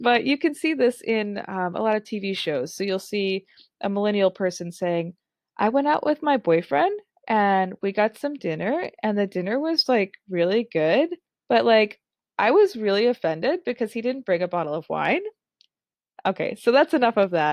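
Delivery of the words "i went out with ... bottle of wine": upspeak, every phrase end rising like questions. Demonstrating a TV-show stereotype of a millennial talking, with rising uptalk pitch. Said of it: "the pitch is going up and up and up".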